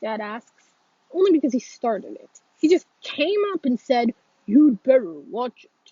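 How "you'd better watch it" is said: deep, low, dumb-sounding put-on voice. Retelling what Brady came up and said, mocking Brady's deep idiotic voice. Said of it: "make my voice sound deep and idiotic like Brady's".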